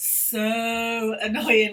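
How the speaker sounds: long stretched vowels on so in so annoying. Example sentence practicing hard vowel sounds, stretched vowels in "so annoying". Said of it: "like really stretch it out".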